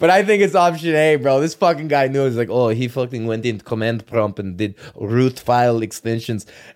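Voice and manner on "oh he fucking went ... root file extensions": put-on, questionable Russian accent. Imitating the guy who knew what had been done: russian accent. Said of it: "I don't know if that's a good Russian accent".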